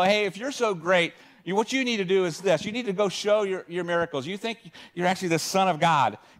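mock sarcastic, snarky, taunting and goading tone. Retelling how brothers goaded their sibling, mock-snarky and goading. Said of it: "You have to read this piece of scripture kind of snarky".

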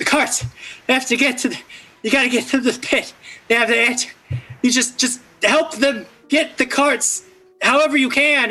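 breathless and rushed. A game master voices an exhausted woman swooping down to the players, breathing heavily. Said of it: "A woman in scorched robes swoops down from above, clearly exhausted and breathing heavily, / A woman in scorched robes swoops down from above, clearly exhausted and breathing heavily, and she says, /".

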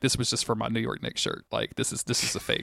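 whisper. Retelling how Mulder grabs the cloth and speaks to him, whispering as Mulder. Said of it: "whispers at him, like".

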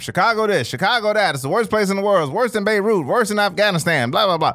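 put-on old-timey 1920s voice. Mocking how people deflect to chicago, in an old-timey 1920s voice. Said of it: "That was my old-timey 20s voice".

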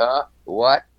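ordinary delivery

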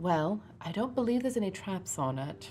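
hushed, very quiet stage half-whisper. Player in a tabletop game, checking a locked handle for traps: very quiet. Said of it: "very quietly say".

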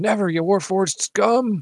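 loud, high scream, stretched out slowly. Voicing a character who peeks over a counter and screams: Callie screaming. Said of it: "And she screams".

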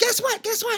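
squeaky puppet voice, way up high. Retelling a phone call where Elmo spoke to him: Elmo voice. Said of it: "He goes".

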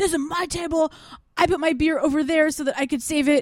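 play-acted, very high, super pissed, furious tone. Retelling a big guy upset about losing his table, acting out super pissed. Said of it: "just starts getting super pissed".

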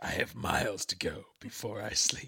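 play-acted creepy, hushed, ominous whisper. Retelling how the Reverend answered an invitation to the reception, mock-ominous. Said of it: "He ominously quotes Robert Frost".

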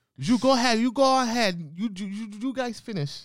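put-on, very high-pitched Spanish-accented English. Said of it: "That's exactly how she talks".

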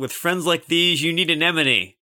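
big, loud, high battle-cry shout. Attacking a robot in the game, shouting a battle cry. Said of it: "I'm gonna shout".

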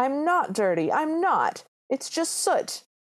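sudden play-acted furious outburst, high and drawn-out. Retelling how a character reacts to being called dirty: imitating a furious yell. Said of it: "instant fury, just immediately furious, and starts yelling".

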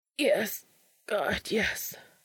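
cracking, trembling, broken, shaky voice. Answering the other man's wordless question, in a broken, shaky voice. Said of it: "his voice all broken and shaky".

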